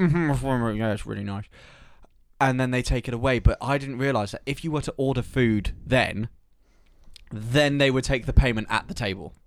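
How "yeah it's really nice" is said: mock full-mouth speech, slower. Describing answering a waitress mid-meal, mock talking with mouth full. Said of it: "your mouth is half full of food".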